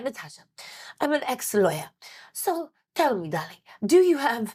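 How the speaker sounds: clumsy, bad put-on Belgian accent. Retelling what her spiritual mentor asked her, in a bad Marie Diamond accent. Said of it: "I'm doing her accent terribly".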